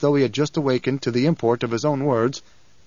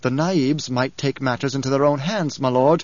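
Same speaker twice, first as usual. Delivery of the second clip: ordinary delivery, nothing marked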